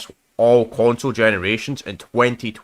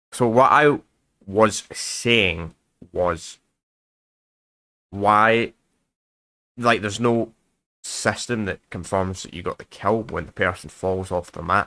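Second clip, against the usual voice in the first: very slow, drawn-out, spelled-out, deliberate words; 3 semitones lower than usual. Repeating a question for a listener who struggles with the accent, speaking really, really slowly. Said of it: "I'll say it really, really slowly".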